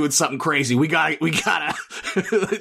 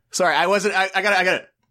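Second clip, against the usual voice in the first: ordinary talk, nothing marked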